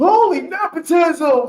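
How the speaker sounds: loud, very high sportscaster shout. Repeating a phrase the other speaker said, in Dick Vitale voice. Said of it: "Dick Vitale voice".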